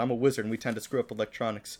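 ordinary talk

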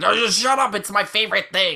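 wild, unhinged loud voice. Imitating fans who reject any critique: imitating a loud, crazy voice. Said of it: "this loud, crazy voice that says".

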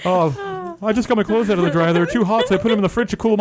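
high-pitched, fast delivery with laughter.

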